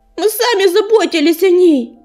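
bitter, said with bitterness. Hurricane replies to the silver cat's voice, bitterly. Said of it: "С горечью бросил ураган".

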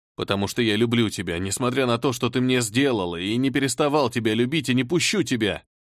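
ordinary delivery

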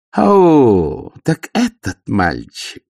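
sneering, mocking growl, very slow, drawn-out o. The baroness taunts Angua as Carrot takes her hand: mocking growl. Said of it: "насмешливо прорычала баронесса".

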